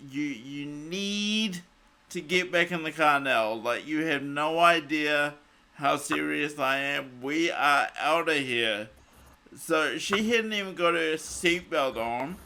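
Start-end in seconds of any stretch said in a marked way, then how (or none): none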